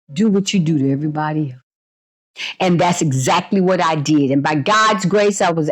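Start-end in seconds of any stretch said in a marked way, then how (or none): 0.2-1.6 softly spoken, hushed, low, gentle voice. Retelling what god answered when the speaker asked what to do, soft voice. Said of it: "in a soft voice".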